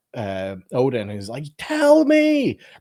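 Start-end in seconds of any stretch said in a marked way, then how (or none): 1.6-2.6 very loud, high, powerful guttural outburst. Retelling a movie scene where Loki lashes out at Odin: imitating Loki's deep guttural shout. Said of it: "such a deep, powerful, guttural response".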